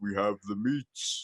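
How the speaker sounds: low, soft, slow announcer voice. Explaining what your deep voice for the dog sounds like, do the Arby's ad guy voice. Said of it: "it kind of sounds like the guy who does the Arby's".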